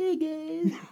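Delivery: very high-pitched, easygoing, casual delivery. Imitating how Mark greets people: imitating Mark. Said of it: "Mark's like".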